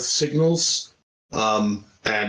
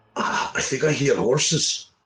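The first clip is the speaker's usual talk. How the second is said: theatrical whisper. Warning the party in character that horses are near: whispering. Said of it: "so I'm gonna whisper in Gnomish".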